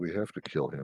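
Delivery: soft, hushed, secretive half-whisper. Player's character brushes over to Nod and asks him, half-whispering. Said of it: "brush over to Nod and just whisper".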